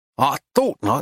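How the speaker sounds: plain reading voice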